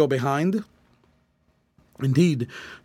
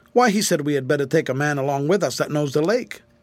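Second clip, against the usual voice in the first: usual speaking voice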